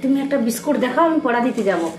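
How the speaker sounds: normal talking voice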